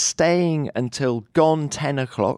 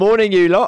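hoarse, croaky voice, higher and louder; 6 semitones higher, 6 dB louder than usual. Greeting everyone early in the morning, in a croaky morning voice. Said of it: "hello, Croaky".

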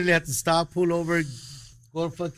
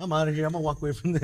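plain

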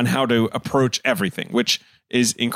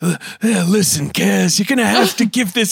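rough, gravelly voice, pitched up; 9 semitones higher, 4 dB louder than usual. Imitating a film character's line: Danny Glover gravel voice. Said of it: "anytime he brings out the gravel".

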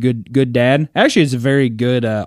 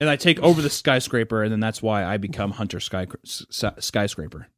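ordinary talk

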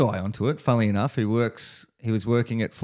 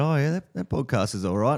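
sly, understated, knowing put-on tone; 3 semitones higher than usual. Retelling what a guy said to him on the way back from a surf, retelling a sly remark. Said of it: "he just slyly said".

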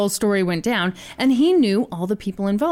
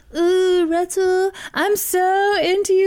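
very high, drawn-out, slow mock-sexy voice; 10 semitones higher than usual. Retelling how a woman agreed to lure a man, mock-sexy voice. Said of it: "This is my sexy voice".

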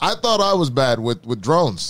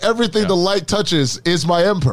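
ordinary talk

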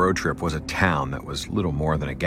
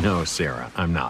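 usual speaking voice

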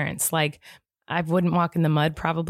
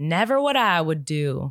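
slow, stretched-out put-on Southern drawl. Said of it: "In a Southern accent".

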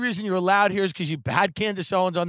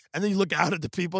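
ordinary talk, nothing marked

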